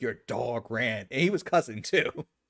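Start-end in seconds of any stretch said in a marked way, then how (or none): 0.0-1.1 put-on panting, out-of-breath, winded delivery. Retelling a friend's words after chasing a dog: imitating someone out of breath. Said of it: "all he could muster because he was out of breath".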